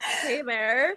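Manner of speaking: sultry, sly, put-on seductive voice. Retelling a cartoon character's diva pose: seductive "hey there". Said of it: "like a seductive, like, sideways".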